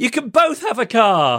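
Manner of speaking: mock panic-stricken, very high, drawn-out voice. Retelling a radio contest mix-up, retelling own panicked words. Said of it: "just in a moment of panic".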